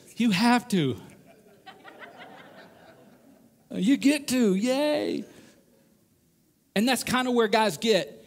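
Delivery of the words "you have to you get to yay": slow, put-on, forced, cheesy brightness. Retelling how a man told husbands this, imitating a picture-day smile. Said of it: "he kind of says it with the smile that your kids give on picture day".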